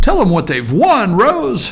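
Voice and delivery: showy game show host announcer delivery. Speaker shows how they'd present the basket, using their game show host voice. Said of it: "That was my game show voice".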